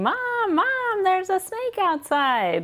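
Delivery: high, mock childish yell. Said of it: "He yells at me".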